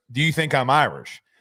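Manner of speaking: put-on Boston-accented voice. Retelling what a man from a Boston neighborhood asked, in a Boston accent. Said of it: "he used his Boston accent".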